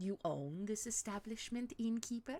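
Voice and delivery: put-on poor Eastern European accent. Playing a character addressing an innkeeper, in a bad eastern european accent. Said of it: "I can do Eastern European".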